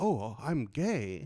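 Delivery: put-on Tokyo accent.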